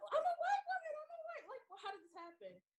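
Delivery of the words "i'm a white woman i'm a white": mock very high, frantic freaked-out screaming. Describing a film scene, the speaker acts out the woman in the streets, imitating screaming. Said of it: "She goes in the streets and screaming".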